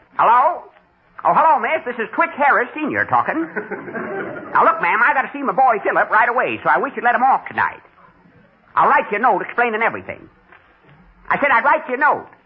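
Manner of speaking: put-on old country bumpkin rube voice. Pretending on the phone to be a boy's father: talking like an old rube. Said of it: "I'll talk like an old rube".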